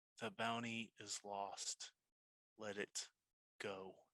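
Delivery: very quiet, dropped-down, very low voice. Narrating for the listeners, voicing Rigid in a very low, quiet tone. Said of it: "You hear a very low, quiet tone".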